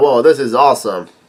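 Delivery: ordinary talk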